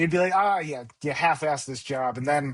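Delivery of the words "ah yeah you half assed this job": mock dismissive, sarcastic tone. Retelling a father's joking criticism of a built patio: imitating dad's sarcastic remark. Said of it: "he would say it sarcastically half the time".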